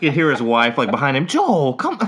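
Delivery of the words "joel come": high, pleading, begging call. Retelling how his wife called him from behind: imitating a wife begging. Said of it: "just begging him to not do it".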